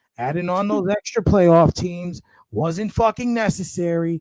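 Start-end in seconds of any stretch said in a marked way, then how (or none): none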